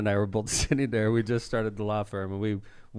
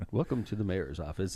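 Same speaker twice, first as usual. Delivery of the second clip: polished, professional delivery; 5 dB quieter than usual. Imitating how John answers the phone at the office: John Vesmar voice. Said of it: "if you ever wanna hear John's voice".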